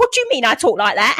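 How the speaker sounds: acted fuming, put-on indignant tone. Imagining a woman's reply to hearing her accent imitated, mock-fuming. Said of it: "she's gonna be fuming".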